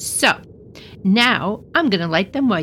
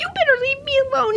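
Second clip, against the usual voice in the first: very high, squeaky little goblin voice. Reading a story, the little goblin shaking with fear warns Herschel, squeaking. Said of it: "he squeaked".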